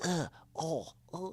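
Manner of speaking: high, fake pained groaning noises. Mocking how an actor plays pain in the films: imitating Harry acting in pain. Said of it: "when Harry's trying to look like he's in pain".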